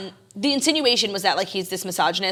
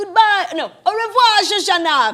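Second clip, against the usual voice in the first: high, slow, drawn-out, menacing sinister yell; 13 semitones higher, 6 dB louder than usual. Retelling a film scene where a Nazi officer yells after a fleeing woman; retelling Christoph Waltz's yell. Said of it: "like in the most Nazi voice ever".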